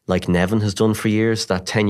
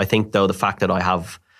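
ordinary delivery

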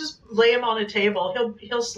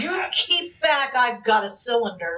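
normal talking voice

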